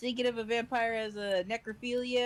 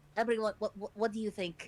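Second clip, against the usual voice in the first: whispered, in a put-on character voice. Voicing a character who pushes someone aside to ask companions: whispering in character. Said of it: "is trying to whisper to Dakota".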